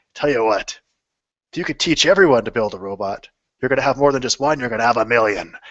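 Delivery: put-on wise old man voice with a sage advising tone. Retelling what an older man told him, in a wise old man voice. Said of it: "his wide old man voice".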